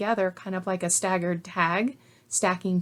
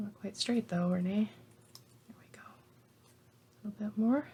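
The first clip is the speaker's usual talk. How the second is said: quiet, focused working whisper; 7 dB quieter than usual. Trimming a project while talking to the camera: whispering. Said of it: "Sorry if I'm whispering".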